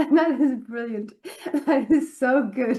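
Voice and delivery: loud, high-pitched, delighted laughing.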